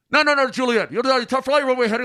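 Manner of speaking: put-on fast, agitated, rapid talk. Retelling a controller's runway instructions on a first solo flight, imitating fast, agitated controller. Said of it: "he's talking fast now because he's getting agitated".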